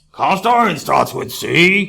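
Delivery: put-on puppet-style kids' TV monster voice. Teaching a classroom about cast iron, the speaker puts on a Cookie Monster voice. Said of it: "Like I'm doing my Cookie Monster voice".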